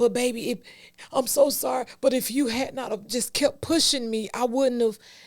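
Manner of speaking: play-acted apologetic, guilt-tripping tone. Acting out an abuser apologizing while blaming: imitating an abuser's blaming apology. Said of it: "some abusers say".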